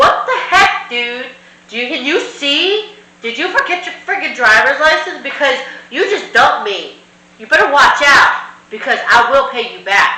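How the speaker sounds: high, angry, rapid-fire delivery.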